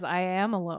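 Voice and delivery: ordinary talk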